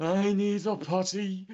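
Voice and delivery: very high-pitched cartoon voice. Talking about funny voices and helium, a speaker does Wakko from Animaniacs. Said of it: "you can be Wacko from the Animaniacs".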